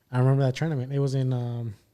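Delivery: ordinary talk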